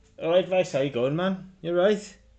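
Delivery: put-on loud voice with Scouse accent. A character greets another in a played scene, in a Scouse accent. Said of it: "she's got a Scouser accent".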